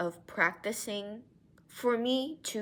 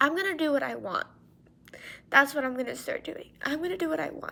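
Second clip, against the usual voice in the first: tearful voice while crying, higher; 6 semitones higher, 3 dB louder than usual. Talking to viewers after getting emotional again: crying while talking. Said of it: "Crying again".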